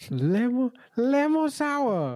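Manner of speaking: very high, swooping, sing-song Japanese woman voice. Asked how japanese women sound, imitating a japanese woman's voice. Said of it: "Could be a Japanese chick".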